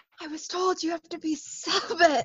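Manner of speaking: hushed, theatrical stage whisper. Playing a character who confides something: stage whisper in character. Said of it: "do one of those stage whispers".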